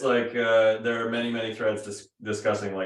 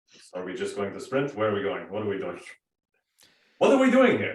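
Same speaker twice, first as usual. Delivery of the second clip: fast, anxious, fretful delivery with rising pitch; 2 semitones lower than usual. Voicing a character afraid to leave a hut for the swamp: nervous character voice. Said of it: "nervous about exiting into the swamp and be like".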